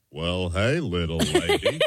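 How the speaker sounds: low, very slow cowboy drawl. Asked to do an impression of the Duke for a guessing game: John Wayne impression. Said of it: "Can you do an impression of him for her?".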